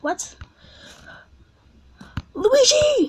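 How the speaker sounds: very high, panicked, nervous shriek. Playing through the final course of a Mario game, a nervous scream. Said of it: "I got nervous and I just screamed Luigi".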